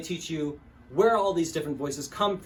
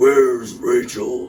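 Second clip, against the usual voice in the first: very loud, deep voice pushed from the throat; 4 semitones lower, 10 dB louder than usual. Demonstrating strained voices with an example, do a throaty Batman voice. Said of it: "Batman has a very throaty voice when he's in disguise".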